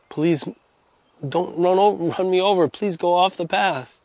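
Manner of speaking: put-on quiet, soft begging tone. Retelling what a man says to a motorcycle rider, imitating a quiet plea. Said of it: "He says quietly".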